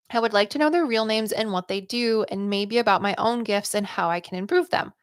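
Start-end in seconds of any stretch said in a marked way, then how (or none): none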